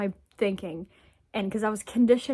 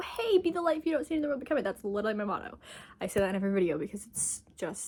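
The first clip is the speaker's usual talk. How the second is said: very fast, soft, rushed speech; 6 dB quieter than usual. A video creator addresses viewers, talking very fast. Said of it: "I'm talking so fast right now".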